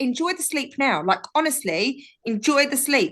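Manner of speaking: plain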